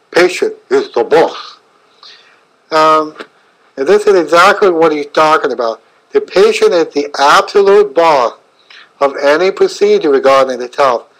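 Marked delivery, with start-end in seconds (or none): 0.1-1.5 put-on heavy German accent, laid on thick. Retelling the first thing a man said to him, thick German accent. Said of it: "in a thick German accent".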